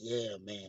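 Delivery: barely-there, very soft, hushed half-whisper. Retelling a stranger at a resort leaning in: imitating someone half-whispering. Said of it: "whispering sweet nothings like".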